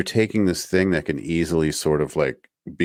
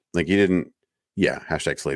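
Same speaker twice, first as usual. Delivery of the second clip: usual speaking voice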